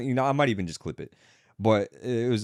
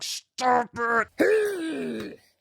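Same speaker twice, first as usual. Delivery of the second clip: put-on angry scolding yell, much higher pitch. Retelling a woman shouting at a bear near her dog; imitating an angry mother yelling. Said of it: "turning into an angry mother yelling at her kids".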